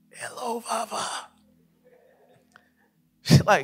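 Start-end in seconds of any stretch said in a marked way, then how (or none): 0.2-1.1 put-on groggy, sleepy just-woke-up voice, quieter. Retelling answering a morning call from someone who calls you Dad, acting out a just-woke-up voice. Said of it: "I just woke up voice".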